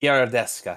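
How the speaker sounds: put-on Italian accent. Saying a character's last name after being asked how to pronounce it: put-on Italian accent. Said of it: "You can't just say it with an Italian accent".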